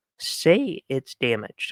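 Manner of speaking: soft voice crack breaking mid-phrase. Talking about buying items from ebay, voice cracking. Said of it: "Sorry about the voice crack".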